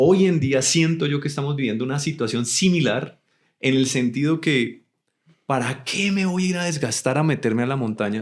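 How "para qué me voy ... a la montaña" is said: put-on sarcastic tone. Mocking the idea of hiking with a camera: put-on sarcastic tone. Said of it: "Estoy siendo sarcástico".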